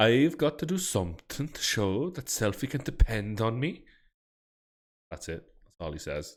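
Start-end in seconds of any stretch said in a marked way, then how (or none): 0.0-3.8 loud, exaggerated put-on Swedish accent, leaning harder. Trying to sound a bit more Swedish for everyone: Swedish accent. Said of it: "try to be a bit more Swedish".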